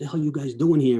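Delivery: high-pitched screaming. Retelling a chief confronting the captain at the site: imitating a chief screaming. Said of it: "He starts screaming at him".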